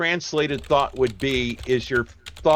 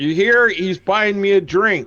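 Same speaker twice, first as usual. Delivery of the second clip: put-on loud, high, nasty, very drunk voice; 7 semitones higher, 5 dB louder than usual. Acting out a scene he describes, speaking as a drunk man: very drunk, unpleasant voice. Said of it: "very drunk, unpleasant voice".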